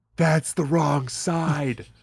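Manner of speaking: cartoon-style fatherly whisper. Warning Bart or Lisa who try to get in on the driver's side, whispering Homer voice. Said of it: "he'll just whisper to you".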